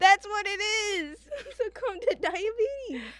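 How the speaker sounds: high, laughing sob, crying with laughter. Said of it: "I'm sorry we're crying right now".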